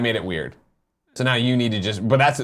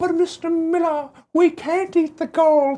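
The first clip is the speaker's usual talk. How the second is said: put-on high, slow, piping little-kid voice. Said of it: "And they go".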